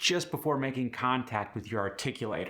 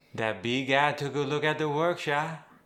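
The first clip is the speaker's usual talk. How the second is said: Cajun English accent; 2 semitones higher than usual. Repeating the teacher's example line: Cajun accent. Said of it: "This Cajun R drop".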